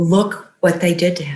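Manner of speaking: ordinary talk, nothing marked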